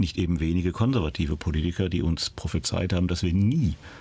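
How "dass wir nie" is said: emphasis laid on the word nie. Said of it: "ich betone nie".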